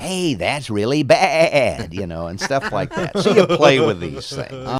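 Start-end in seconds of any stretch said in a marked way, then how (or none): 0.0-1.9 slow, relaxed, easygoing radio DJ voice. Describing how he voiced a character named McBilly, Casey Kasem voice. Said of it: "I'm basically doing Casey Kasem".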